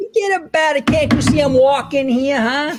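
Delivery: put-on slight Jersey accent, very high. Joking with a guest after calling him a fellow Italiano: put-on Jersey accent. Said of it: "little jersey there".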